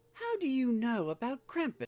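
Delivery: very high, surprised, caught off guard. Reading a story aloud to a listener: surprised voice. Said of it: "asked Cherry in a surprised voice".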